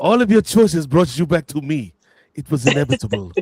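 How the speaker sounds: put-on supervillain voice with a French accent. Joking that someone is about to be Thanos for real; Thanos with a French accent. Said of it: "just with a French accent".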